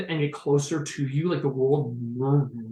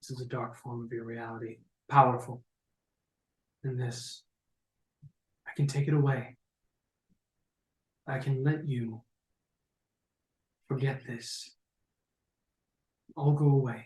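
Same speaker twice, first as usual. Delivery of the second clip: calm, collected and caring voice; 2 semitones lower, 6 dB quieter than usual. Narrating a crystal figure speaking to Zummyar from behind, calm, collected, caring. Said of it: "you hear a voice that seems calm, collected, caring".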